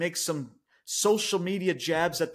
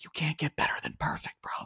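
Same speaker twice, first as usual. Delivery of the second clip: soft, hushed whisper close to the mic; 7 dB quieter than usual. Telling fans the show was not perfect, whispering into the microphone. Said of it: "I'm gonna whisper in this microphone".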